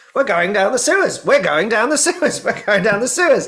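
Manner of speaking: echoey growl, very high and loud. Retelling a story where Knick-Knack's voice comes out of Ruby, echoey and growly. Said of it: "echoey, growly voice of Knick-Knack".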